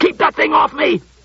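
very high-pitched yell. As a robot advances on him, a retreating zymologist cries out, yelling. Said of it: "Klusar yelled".

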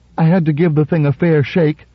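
defensive tone. Narrating a story, a man under a hard stare adds his excuse, defensively. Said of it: "He added defensively".

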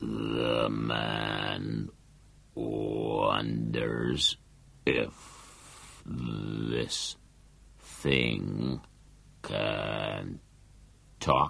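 put-on low, slow, slurred gritty voice. Reading a story where a talking stone first speaks, in a slow slurring gritty voice. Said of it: "a slow and slurring voice, a hollow and gritty one".

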